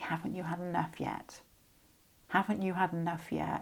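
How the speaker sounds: soft, hushed, half-voiced stage whisper. Voicing an imagined loved one who speaks from beyond: imitating someone half-whispering. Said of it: "They'd be whispering".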